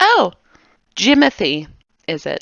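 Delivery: put-on wary, recoiling, shrinking voice. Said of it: "clutching her hands to her chest, and she's, like, leaning away from him".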